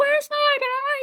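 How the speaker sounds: frantic, very high, wild screaming rant. Acting out yelling at a woman trying to help, mock screaming lunatic. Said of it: "you're not a screaming lunatic".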